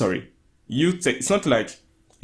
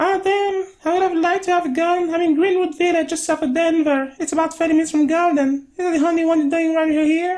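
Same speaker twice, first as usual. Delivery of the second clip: put-on girl voice, higher; 3 dB louder than usual. Reading aloud a girl's messages to a comedian: put-on voice for the girl. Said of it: "I'm gonna try to do two little voices".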